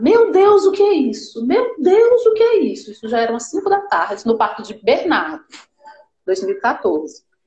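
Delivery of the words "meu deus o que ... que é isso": high, pitched-up shout. Retelling how the doctor reacted during the birth: imitating a doctor shouting. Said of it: "esse homem começa a gritar".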